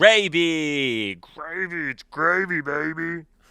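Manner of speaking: very high, shrill, booming monster voice, stretched words. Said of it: "expecting that monster voice to come out".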